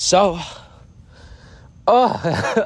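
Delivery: high, breaking, choked-up emotional voice.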